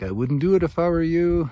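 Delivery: put-on Québécois French accent. Retelling a warning given on the way down to the spring: Mac's Quebec accent.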